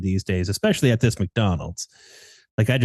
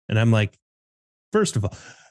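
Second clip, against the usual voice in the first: ordinary delivery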